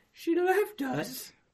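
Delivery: squeaky, quavering, trembling elf voice, very high. Recalling a moment, quoting Dobby in a shaky Dobby voice. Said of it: "His, like, shaky".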